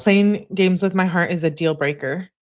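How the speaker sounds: usual speaking voice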